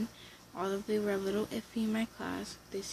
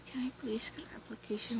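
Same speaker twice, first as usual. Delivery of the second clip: timid, soft, quiet, shy voice; 2 semitones higher, 4 dB quieter than usual. Advising a class not to be quiet when asking: quiet and shy. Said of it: "What I mean by don't be quiet".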